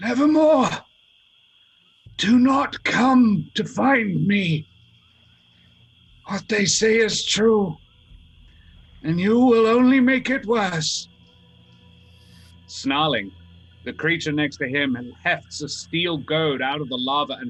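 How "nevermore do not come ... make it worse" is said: high, hoarse, croaking cry, loud. Narrating a story as the beaten Corvum speaks to the listener, Corvum's croaking voice. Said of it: "he croaks out a single phrase".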